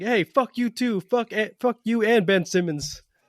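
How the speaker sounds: high, drawn-out acted yell, stumbling midway. Retelling how a fan in a parking lot yelled back: imitating someone yelling. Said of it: "someone just yells at him".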